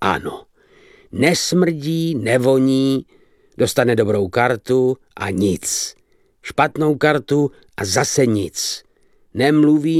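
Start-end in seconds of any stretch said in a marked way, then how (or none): none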